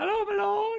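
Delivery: put-on very high, very loud young teenage girl voice. Voicing a character carrying a bundle of linens, fifteen-year-old girl voice. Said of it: "can do a fifteen-year-old girl voice".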